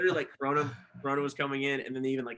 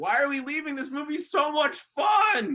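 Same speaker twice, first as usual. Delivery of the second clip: mock, very high, shrill yelling; 13 semitones higher, 6 dB louder than usual. Recalling being pulled from a cinema seat mid-movie, retelling own past yell. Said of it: "me yelling like".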